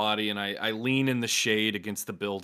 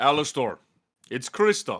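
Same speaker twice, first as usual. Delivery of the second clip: loud put-on Russian accent; 4 semitones higher, 5 dB louder than usual. Player voicing Christoph answers Alastor, in Christoph's deep Russian accent. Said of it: "Russian, but I I want to be like deep".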